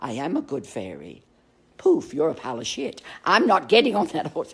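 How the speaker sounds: animated, swooping, wide-swinging pitch. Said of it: "I wish I could do the accent".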